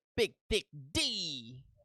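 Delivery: called out in the open. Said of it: "But he would go".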